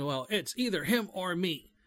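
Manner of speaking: blustering, blustery delivery.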